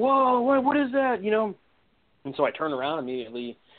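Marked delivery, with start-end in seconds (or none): 0.0-1.2 mock very high, slow, drawn-out yell. Walking ahead of the group, the speaker quotes a buddy behind them: retelling a buddy's yell. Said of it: "yelling like".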